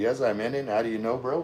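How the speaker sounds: plain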